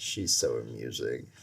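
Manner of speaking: low, dry, deadpan delivery. Quoting a favorite movie line, a husband talking about his wife, imitating deadpan delivery. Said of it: "his way to just deadpan everything".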